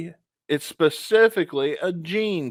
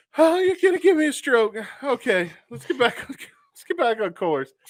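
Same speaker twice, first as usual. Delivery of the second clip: high, breathless, winded voice through laughter; 7 semitones higher than usual. Recovering from a laughing fit during a guessing game, breathless from laughing. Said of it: "I'm lightheaded now and I can't breathe".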